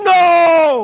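loud high-pitched shout.

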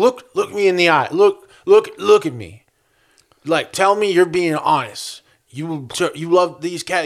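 play-acted boozy, repetitive drunk-man rambling. Retelling how an older man who was asked about cats talked: imitating a drunk man. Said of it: "drunk guy stuff where he's like".

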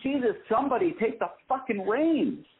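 shrill yelling pitched way up. Recounting an air conditioning problem at a restaurant, re-enacting their outburst: retelling a yell. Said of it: "And I'm yelling".

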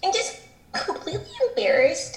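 soft, squeaky, little girlish-sounding put-on voice. Quoting a woman who says she is embarrassed, imitating her squeaky voice. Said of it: "her like squeaky ass voice".

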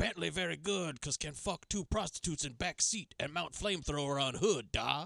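put-on Russian gangster accent, mob boss voice. Speaker tells Bentley this is Al Pacino: Al Pacino as a Russian gangster. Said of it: "doing an impression of a Russian gangster".

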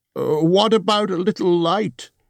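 apologetic, sorry-sounding, very high voice. Narrator reading Bilbo's question to the dwarves in the dark, apologetic. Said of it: "said Bilbo apologetically".

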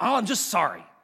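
insincere, throwaway tone. Talking about apologies, showing how people usually say sorry: insincere apology tone. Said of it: "they say it in tones like that".

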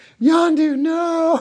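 high, loud, anguished screamed cry.

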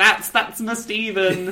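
put-on gushing, thrilled, excited, proud voice. Retelling how Pearl disrupts the play: imitating Pearl excitedly. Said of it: "she disrupts the whole play to excitedly be like".

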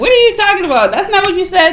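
very high-pitched, irritated, aggravated tone. Recounting a tense interview, retelling an aggravated retort. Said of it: "because I was getting aggravated".

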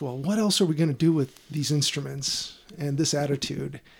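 ordinary delivery

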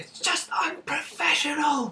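mock, full-throated, very high, top-of-voice shout. Describing a film scene, the speaker acts out the wife's line, retelling a shout at full voice. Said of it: "she shouts at the top of her voice like".

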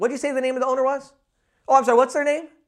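really quick and snappy. Demonstrating the particular way you have to say it: really quick and snappy. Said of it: "You gotta say it really quick, really snappy".

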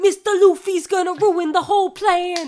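put-on thick New Jersey accent, very loud and belted. Recalling a dubbed cartoon character's line, in Rooster's heavy New Jersey accent. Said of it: "he has like this very heavy New Jersey accent".

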